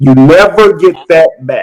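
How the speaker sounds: slow, deliberate, emphatic delivery.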